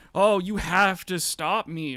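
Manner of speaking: play-acted, theatrical, loud, drawn-out pleading. Retelling a streamer begging chat for memberships: imitating a streamer begging. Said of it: "begging chat".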